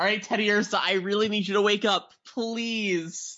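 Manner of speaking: high-pitched, outright shouting. Player's character calls to Teddy Ursa during a tabletop game turn, shouting. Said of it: "So are you just shouting that?".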